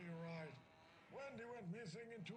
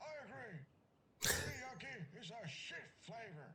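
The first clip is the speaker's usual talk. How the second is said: loud, classic put-on old man voice; 2 semitones higher, 6 dB louder than usual. A voice on the phone line chimes in, in a classic old man voice. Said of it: "classic old man voice".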